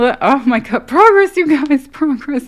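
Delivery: borderline giddy, very high, very loud, shrill, swooping. Reading tarot cards and seeing progress, telling you guys: borderline giddy. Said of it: "I'm I'm borderline giddy".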